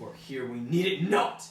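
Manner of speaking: loud furious scolding.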